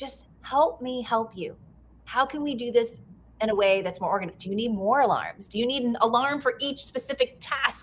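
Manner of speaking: normal talking voice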